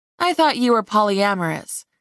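plain reading voice

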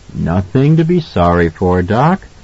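ordinary delivery

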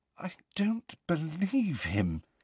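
soft, wavering, very unsteady voice. Just out of someone's earshot, speaking to a companion; very unsteady voice. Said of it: "in a very unsteady voice".

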